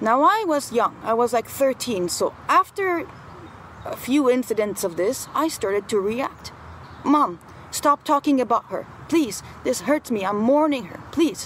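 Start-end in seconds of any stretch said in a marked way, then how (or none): 7.0-11.5 upset, pleading voice, faster pace. Retelling how, at thirteen, they begged their mom to stop; retelling upset pleading. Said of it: "And I would get really upset".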